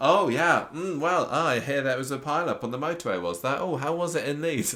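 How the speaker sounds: forced nonchalance. Retelling how a man casually quizzes another at day's end, mock-nonchalant questions. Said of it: "trying to sound like very nonchalant".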